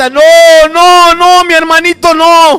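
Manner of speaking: very loud, high, long, drawn-out wailing scream. Retelling a daughter screaming on seeing her brother: retelling a girl screaming. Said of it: "ella grita".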